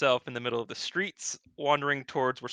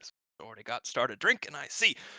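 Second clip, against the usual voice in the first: mumbling, muttering under breath; 2 semitones lower than usual. Voicing a dwarven bartender muttering under his breath: bartender muttering under his breath. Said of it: "hear under, uh, the bartender's breath".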